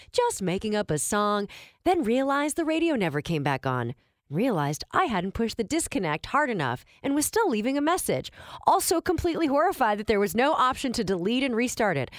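ordinary talk, nothing marked

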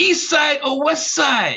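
put-on Ghanaian accent. Retelling a Ghanaian gentleman's question to the speaker, in a heavy Ghanaian accent. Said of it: "in a heavy accent".

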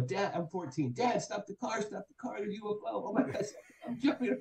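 worked-up, excited, high-pitched, urgent. Retelling what they said to dad at fourteen on seeing a ufo, acting out excitement.

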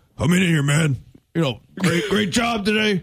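put-on grumbly old coach voice. Imagining a grumbly coach's locker-room speech: grumbly Mike McCarthy voice. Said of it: "an old, grumbly Mike McCarthy be like".

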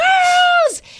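play-acted, very high-pitched yelling at full strength. A parent retelling calling out to the kids at home, retelling a yell. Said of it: "So I'm yelling like".

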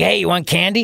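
put-on creepy old man voice. Showing how a remark comes across: imitating a creepy old man. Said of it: "like a creepy old man".

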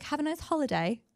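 fake high British accent. Wishing to sound British while saying goodbye: put-on British accent. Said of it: "I wish we were British so I could be like".

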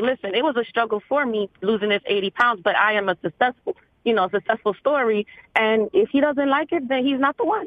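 ordinary talk, nothing marked

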